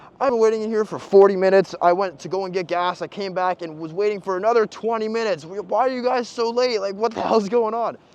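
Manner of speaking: mock, high, loud screaming rant. Retelling how a girl in a garage started screaming about waiting: imitating someone screaming. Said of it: "just starts screaming at him".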